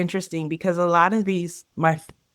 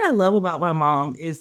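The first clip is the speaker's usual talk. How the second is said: ordinary talk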